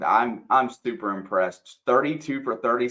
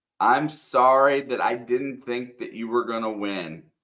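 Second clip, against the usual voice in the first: ordinary talk, nothing marked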